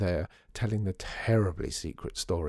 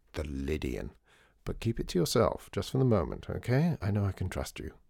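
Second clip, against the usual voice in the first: plain reading voice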